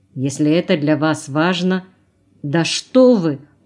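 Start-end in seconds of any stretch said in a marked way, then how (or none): 2.4-3.4 horrified, aghast, much slower. A woman objects to what someone just said: horrified. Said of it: "ужаснулась она".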